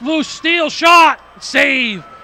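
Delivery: excited, high, loud shouted call.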